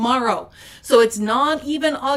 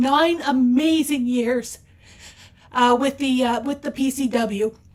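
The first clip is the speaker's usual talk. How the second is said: emotional, choked up, voice catching, holding back. Announcing an anniversary month celebration, getting choked up. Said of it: "I'm getting a little choked up here".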